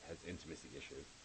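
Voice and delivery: low, soft, purring fey voice. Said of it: "Why did your voice change there?".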